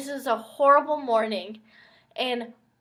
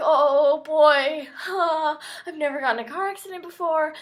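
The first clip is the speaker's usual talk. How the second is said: put-on panicked, nervous, freaked-out voice; 4 semitones higher than usual. Retelling own past words while braking before a crash: retelling own panicked words. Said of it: "I'm freaking out".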